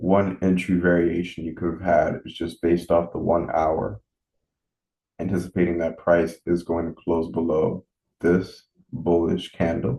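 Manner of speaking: really slow, deliberate, drawn-out delivery. Explaining a trade entry after deciding to talk really slowly. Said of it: "So I'm gonna talk really slow when I say this".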